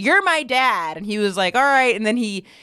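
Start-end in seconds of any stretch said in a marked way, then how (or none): 0.0-1.0 loud yell, called out high-pitched. Retelling what an audience member yelled to him at a show, yelled. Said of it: "And then the person yelled".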